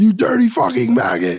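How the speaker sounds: very high, shrill boot-camp drill-sergeant yell. Playing a boot camp sergeant yelling at a recruit: drill sergeant yelling. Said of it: "a sergeant yelling at you in boot camp".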